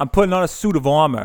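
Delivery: put-on New York accent. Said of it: "It's his New York accent".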